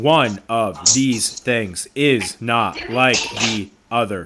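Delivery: very slow, each word said separately. Describing how they all look at you and say it, one word at a time. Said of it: "they say this like one word at a time".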